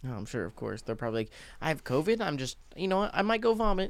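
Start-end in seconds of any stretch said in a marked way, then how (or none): 1.6-3.9 voice pitched way up, very high. Joking about people with COVID feeling nauseous, speaker imitates one: Karen voice. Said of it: "My Karen voice came on".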